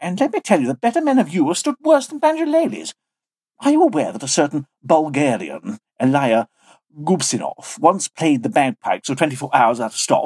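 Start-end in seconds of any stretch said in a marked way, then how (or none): none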